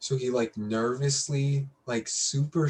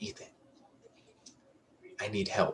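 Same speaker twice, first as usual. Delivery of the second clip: secretive, hushed, breathy whisper; 2 semitones lower, 6 dB quieter than usual. Retelling what a friend said quietly in the truck: imitating a whisper. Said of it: "whispering this to me".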